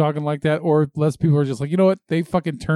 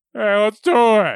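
put-on mildly excited cartoon voice, higher and louder; 6 semitones higher, 4 dB louder than usual. Trying a mildly excited Joe voice for the podcast: mildly excited Joe voice. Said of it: "I can do mildly excited".

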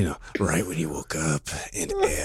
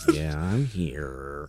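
cartoon donkey voice with the word here drawn out; 3 semitones lower, 4 dB quieter than usual. Imitating another speaker's greeting: Eeyore voice. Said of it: "it sounded more like Eeyore".

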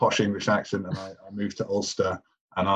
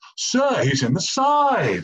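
put-on high, shrill, loud English accent, drawn out; 11 semitones higher, 5 dB louder than usual. Retelling what Danno called out mid-game, imitating Danno's shrill English accent. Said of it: "this shrill English accent going".

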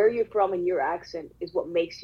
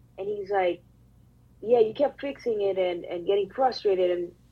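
plain

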